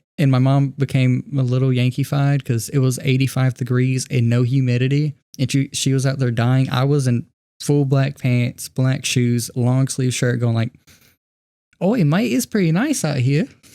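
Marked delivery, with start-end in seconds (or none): 11.8-13.5 casual put-on Australian accent, pitched up. Speaker retells what they said while out with their mom, in an Australian accent. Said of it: "I don't know why I went Australian".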